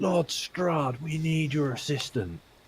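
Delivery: shrill, full-throated screaming at the top of lungs. After nearly being killed, she calls to a lord for assistance, screaming at the top of her lungs. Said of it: "She just screams at the top of her lungs".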